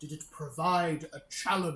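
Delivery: big, booming, very loud voice. Voicing a character in a role-playing scene, speaker uses a booming voice. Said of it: "trying to raise the voice a little bit. Booming, booming voice".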